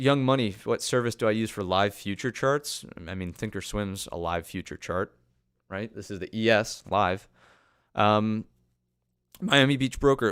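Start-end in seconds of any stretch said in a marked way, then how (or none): 9.4-10.3 loud, cracking voice. Reading out a viewer's name on a live stream, the speaker's voice cracks: voice cracking. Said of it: "voice crack. Apologies".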